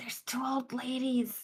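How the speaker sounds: sneaky half-whisper, a stage whisper. Sneaking back close enough so they hear: half-whispering. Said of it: "so they can hear me whisper".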